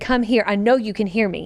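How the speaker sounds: plain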